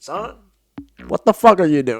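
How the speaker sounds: put-on condescending old man voice. Retelling how an old guy at the gas station scolded: imitating an old guy. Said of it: "some old guy shows up and he's like".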